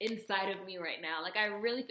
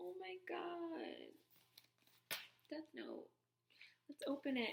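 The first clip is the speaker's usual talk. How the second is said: choked-up, very soft, hushed, high voice, close to crying; 7 semitones higher, 13 dB quieter than usual. Opening a Death Note journal someone gave him, emotional, near tears. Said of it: "I feel like I'm gonna cry".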